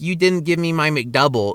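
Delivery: ordinary talk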